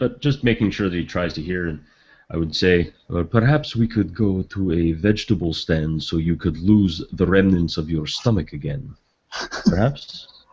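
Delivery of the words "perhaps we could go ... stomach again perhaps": muttered quietly under the breath. Speaking in character to Joshua: muttered under breath. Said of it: "kind of under my breath".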